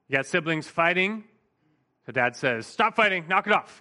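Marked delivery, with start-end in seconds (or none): 2.6-3.6 put-on barking voice, higher pitch. Describing a dad breaking up fighting siblings, retelling him barking commands. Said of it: "dad comes in and he barks some commands".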